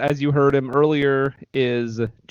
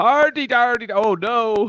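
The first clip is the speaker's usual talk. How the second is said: put-on Irish brogue, pitched higher; 9 semitones higher than usual. Slipping into the others' bit despite objecting: mock irish accent. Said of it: "You got me doing that".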